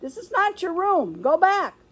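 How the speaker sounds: tiny squeak. The narrator calls out from a cage during class, squeaky voice. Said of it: "I squeaked".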